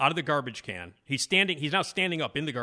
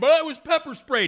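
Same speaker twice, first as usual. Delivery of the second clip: very high, shrill, loud scream; 12 semitones higher, 8 dB louder than usual. Telling a story about a man on the train, imitating him screaming. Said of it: "And then he starts screaming".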